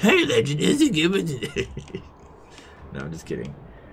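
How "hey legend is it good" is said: stupid put-on voice, very high, slow and drawn out. Mimicking how the guys always sound on Discord calls, stupid voice. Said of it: "I just try to make the most like stupid voice I can".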